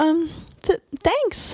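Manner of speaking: stuttering speech. A woman answers the narrator's compliment, stammered. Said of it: "she stammered".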